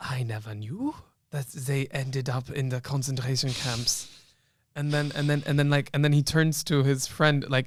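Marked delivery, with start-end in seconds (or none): 0.0-4.1 bad, very silly put-on German accent. Retelling what a judge said in a courtroom, in a very stupid german accent. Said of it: "says in a very stupid German accent".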